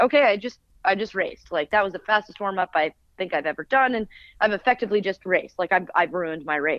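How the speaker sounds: ordinary talk, nothing marked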